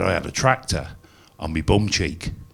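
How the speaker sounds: ordinary delivery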